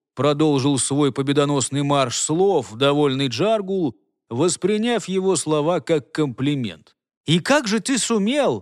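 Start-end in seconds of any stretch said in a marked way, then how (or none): 7.3-8.6 high, mocking, sarcastic outcry. The young man answers Jargul's boasting with a sarcastic exclamation. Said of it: "саркастически воскликнул".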